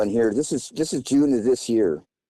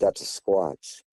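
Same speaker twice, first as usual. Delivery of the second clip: hushed whisper under the breath; 4 semitones lower, 4 dB quieter than usual. Retelling what he whispered to Lori after waking in the night, whispering. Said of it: "I whispered to her".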